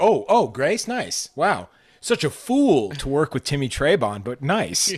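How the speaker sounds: loud, sing-song, snide, mocking voice. Acting out how the others will go back to trashing you, imitating snide mockery. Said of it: "go back to you know trashing me".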